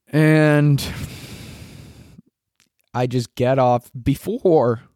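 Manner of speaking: cracking, breaking voice partway through. Speaker recounting a day out, mid-sentence; voice crack. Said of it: "that was a nice voice crack".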